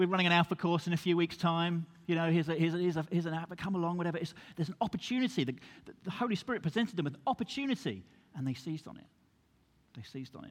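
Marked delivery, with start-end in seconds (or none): none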